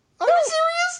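squeaky, very high-pitched voice. Asking in disbelief whether another speaker disliked the book: high-pitched voice. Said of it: "I love it when [name] goes high-pitched".

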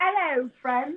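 put-on, fake-sounding British accent. A child caller greets the show's host: fake British accent. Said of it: "A fake British accent".

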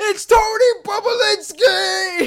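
very loud, very high, shrill scream at full volume. Retelling sitting on the couch screaming at the TV: retelling screaming at the TV. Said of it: "screaming at the T V".

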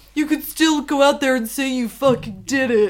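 put-on upbeat frat boy voice. Acting out a frat boy urging his dorm mate to play football, encouraging frat boy voice. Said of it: "Encouraging frat boy".

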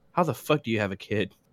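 mock very low, straight-faced deadpan delivery. Retelling how a friend reacted to a rant: imitating a friend's straight-faced question. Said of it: "with a straight face".

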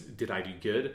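put-on broken voice, breaking, barely holding together. Retelling a game scene, quoting Joel: imitating a really broken voice. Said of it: "in this, like, really broken voice".

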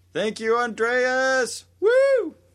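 held-back, restrained shout, very high, very slow, drawn out. Giving a shout out to a generous donor: restrained shout. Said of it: "I like how you tried to control your volume there".

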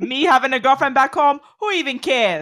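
attempted Chicago accent. Speaker tries a Chicago accent right after saying he can't, attempted Chicago accent. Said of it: "Is that good?".

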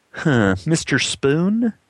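questioning tone with rising pitch. Narrator reading Louise at the typewriter saying the name: questioning. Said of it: "she said questioningly".

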